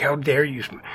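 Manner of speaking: ordinary talk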